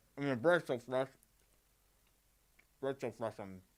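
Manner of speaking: talking with mouth full. Tasting food on a television program mid-bite, talking with mouth full. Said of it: "not to talk with your mouth full".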